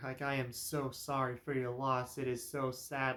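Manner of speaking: deadpan, toneless, flat, droning monotone. Mocking Derek, who is supposed to be mourning, in Derek's flat monotone. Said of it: "he has such a monotone voice".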